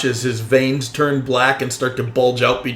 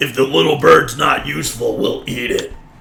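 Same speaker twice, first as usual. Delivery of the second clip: rasping, rough, creaky creature monster voice. Game master voicing a bugbear screaming out at the party, bugbear tone of voice. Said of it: "like in a bugbear tone of voice".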